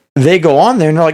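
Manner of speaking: plain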